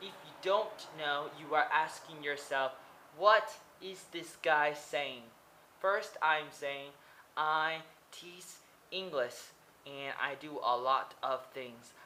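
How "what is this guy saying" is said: ordinary talk, nothing marked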